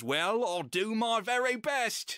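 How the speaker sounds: very slow, high put-on British accent. Retelling what he says turning to the camera, in a British accent. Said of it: "We need to get you to do a British a- accent".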